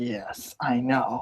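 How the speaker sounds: low, soft, half-cackling near-cackle. Acting out a woman's reply to Jamie, imitating a near cackle. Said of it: "She's like cackling almost".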